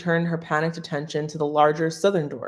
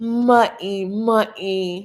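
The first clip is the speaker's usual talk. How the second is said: teasing moan; 4 semitones higher than usual. Narrating a man who mocks a woman after she glares: mocking moaning voice. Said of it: "he mocked her with a moaning voice".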